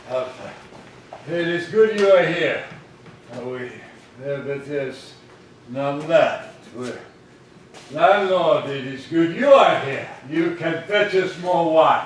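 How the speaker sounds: put-on loud, tipsy, drunken, wine-soaked voice. As Athos, speaking to D'Artagnan and the landlord, drunk. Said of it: "I'm drunk".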